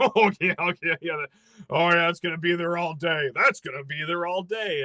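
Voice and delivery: play-acted, very mocking, scornful, sarcastic scoffing tone. Retelling what a Michigan fan behind him said, imitating a mocking fan. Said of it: "in a very mocking tone".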